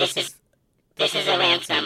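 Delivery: alien-sounding voice-changer effect. Making a mock ransom call through a voice changer, alien voice-changer voice. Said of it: "are you sound like an alien".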